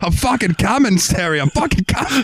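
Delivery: put-on Australian accent. Acting out the imagined couple in bed: put-on australian accent. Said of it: "now that we've offended all the Australians".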